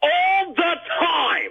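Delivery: loud yell. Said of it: "You don't have to yell".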